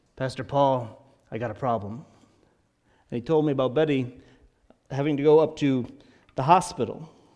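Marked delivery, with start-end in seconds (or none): 0.2-2.1 deep, gravelly, rasping voice. Retelling a phone call from Dell: imitating Dell's gravelly ex-Marine voice. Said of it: "Dell's ex-Marine gravelly voice".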